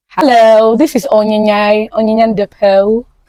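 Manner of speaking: fake British accent, well enunciated, careful diction. A podcast host introduces themself on today's episode in a put-on British accent. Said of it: "I don't know if this is dictionized enough".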